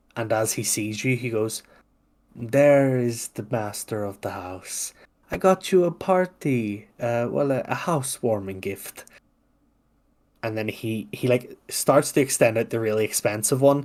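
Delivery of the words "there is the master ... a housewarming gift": condescending, patronizing, talking-down tone. Voicing a character greeting the master of the house: condescending tone.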